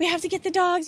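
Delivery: mock high, shrill scream of shock. Recounting debris flying and the house gone, speaker re-enacts screaming at the time. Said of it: "I just kind of started screaming like".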